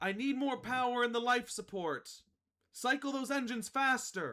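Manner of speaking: loud yelling. Narrator describes a voice echoing from a distance to the listener, yelling orders. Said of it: "you're gonna hear one person yelling like".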